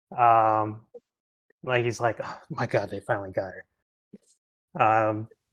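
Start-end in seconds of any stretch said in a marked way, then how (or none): 2.3-4.8 soft, muttered, under-the-breath whisper. Voicing a panicked brother muttering to himself: whispering under his breath. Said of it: "kind of whispers something under his breath".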